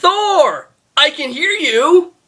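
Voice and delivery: acted, very shrill, very slow, drawn-out scream. Retelling a villain's line from the movie, imitating Loki screaming. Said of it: "And Loki screams".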